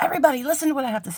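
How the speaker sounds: high call projected far, to the back. The speaker suddenly feels like yelling at the back of a classroom. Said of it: "I'm like yelling at the back of a classroom".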